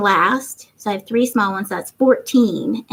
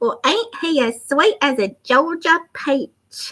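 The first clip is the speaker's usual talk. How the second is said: fake Southern accent, slightly mixed, pitched up; 5 semitones higher than usual. Reading out what someone said about him, say it in a put-on accent. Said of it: "Do I have to say that in an accent?".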